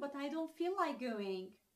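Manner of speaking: normal talking voice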